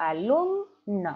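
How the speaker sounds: alumno, with the syllable lum leaned on. Teaching Spanish stressed syllables with alumno, stress on 'lum'. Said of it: "mi sílaba tónica es lum".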